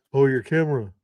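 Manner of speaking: mock sneering, mocking tone. Repeating another speaker's words back at them: imitating a mocking tone. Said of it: "why are you mocking that?".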